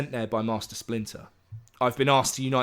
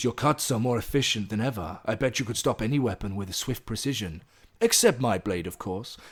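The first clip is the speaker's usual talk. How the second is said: terrible, almost Japanese put-on accent; 2 semitones lower than usual. Recounting a scene between two characters, the speaker voices one: terrible, almost Japanese accent. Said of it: "now I'm going to do a terrible, almost Japanese accent".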